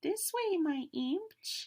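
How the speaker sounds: very high, slow, tiny squeaky voice. Narrator hearing a tiny voice over the howling wind, tiny squeaky voice. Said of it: "I thought I could hear a tiny squeak saying".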